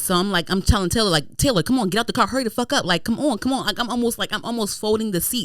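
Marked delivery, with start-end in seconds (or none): 1.4-3.7 anxious, hurried, nervous prodding delivery. Retelling urging a friend out of the car: imitating anxious urging. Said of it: "I'm anxious".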